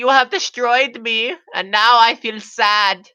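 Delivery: very high, shrill, loud cartoon villain voice. Describing someone who talks like Skeletor, acting out his lines: Skeletor voice. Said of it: "the voice of Skeletor".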